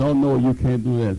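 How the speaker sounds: normal talking voice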